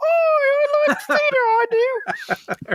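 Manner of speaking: very high-pitched, slow, drawn-out voice. Contrasting with another actress: Keira Knightley impression. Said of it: "As opposed to Keira Knightley".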